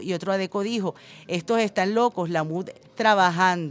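ordinary delivery

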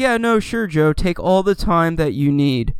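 mock kindly, understanding, very sympathetic voice. Retelling how a boss answered a time-off request: imitating a sympathetic boss. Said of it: "Like in this very sympathetic sort of voice".

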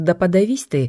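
plain

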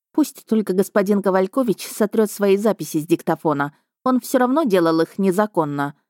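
ordinary delivery

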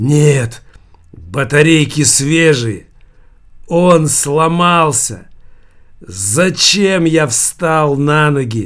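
slow, drawn-out outcry. Savva answers his mother about the radio, crying out. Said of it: "вскричал Свиньи и с силой швырнул радиоприемник".

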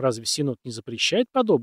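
ordinary delivery

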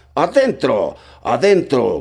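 furious, loud, high, swooping shout with cursing. The blind man, angry at his men's delay, shouts at them, shouting. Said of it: "Gritábales, maldiciéndoles por su demora".

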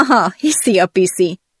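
with loud laughter. Hearing a man vow to win them back, the narrator answers, laughing out loud. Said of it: "nevettem el magam hangosan".

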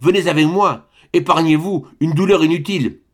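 pleading, begging tone. Narrator voicing a man begging a woman to leave the room with him, imploring.

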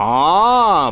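drawn-out, stretched sound, drawling. Mishutka answers his friend after learning the flight was a dream, drawn-out. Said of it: "протянул Мишутка".

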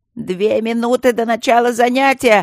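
loud, high-pitched yelling. Before class at the lecture hall, the camenae call out to the students, yelling. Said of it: "заорали камены".

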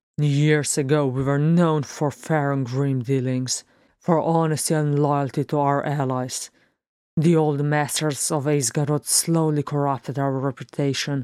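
plain

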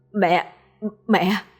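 mumbling and babbling incoherently, inarticulate. Luân, waking in a hospital bed, calls for his mother, mumbling incoherently. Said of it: "Cậu ta ú ớ".

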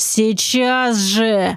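hissed sharply through the teeth. Narrating a character's curt reply to the mentor, hissing it. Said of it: "— прошипел Нак".

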